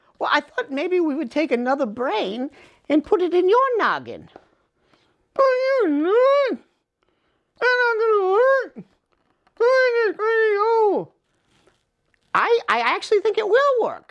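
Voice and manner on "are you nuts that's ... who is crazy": slurred, mushy, higher-pitched garbled creature voice. In a puppet show, the reanimated patient answers the doctor's plan: slurred, hard-to-understand voice. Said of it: "Um, in the process of reanimating you, when um, we, we, we may have affected your brain just a little bit. / You can't hardly talk. ... Well, you might be a little hard to understand, / Uh, if you thi".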